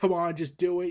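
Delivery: ordinary delivery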